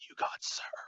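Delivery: slow, soft, eerie whisper.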